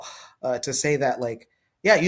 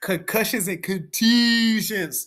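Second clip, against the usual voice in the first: put-on Baltimore accent, pitched up; 7 semitones higher than usual. Talking about stones thrown after soccer games, the speaker uses a Baltimore accent. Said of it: "in my best Baltimore accent".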